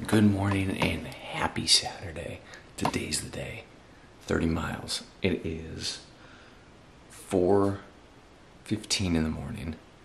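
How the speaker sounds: even, held-back, restrained and careful voice. At 4:15 in the morning before a 30-mile run, family asleep upstairs, talking very quietly. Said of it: "I'm talking very quietly".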